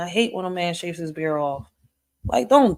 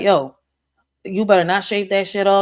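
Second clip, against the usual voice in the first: put-on angry old man voice, louder; 2 semitones higher, 5 dB louder than usual. Retelling what a grandpa said to men shaving: imitating an angry grandpa. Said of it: "he would get so pissed off".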